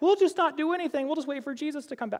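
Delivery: very high-pitched voice. A speaker quoting the church at Thessalonica, in a high voice. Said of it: "I don't know why I'm speaking in a high voice".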